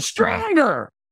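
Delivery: very high, shrill, furious, in-your-face screaming yell. Retelling a firewalk, the trainer screams again: imitating a trainer screaming angrily. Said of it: "got in my face again and screamed".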